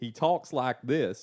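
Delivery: put-on loud, broad Texas accent, laid on thick. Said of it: "has like a really thick accent".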